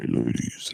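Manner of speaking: deep, froggy-sounding voice. Speaker remarks on their own voice, then greets the ladies; deep voice. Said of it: "it sounds pretty deep right now".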